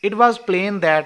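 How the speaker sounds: ordinary delivery, nothing marked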